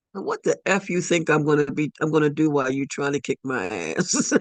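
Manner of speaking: ordinary talk, nothing marked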